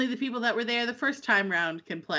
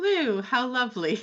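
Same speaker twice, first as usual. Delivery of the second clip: mock passive-aggressive tone, much slower. Retelling what someone said, mock passive-aggressive. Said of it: "she was a little bit passive aggressive".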